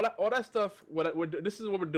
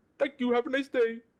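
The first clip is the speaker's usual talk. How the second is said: high-pitched, put-on Indian accent. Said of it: "can't even do my Indian impression".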